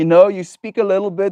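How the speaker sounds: accent from Afrikaans. Demonstrating how you think people expect you to sound, in an overdone Afrikaans accent. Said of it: "Expected Afrikaans accent is more something like this".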